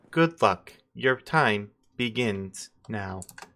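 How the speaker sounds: computerized, automated electronic system announcer voice. Voicing an electronic voice that greets the players in a tunnel: electronic announcer voice. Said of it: "you hear the electronic voice kick in again and goes".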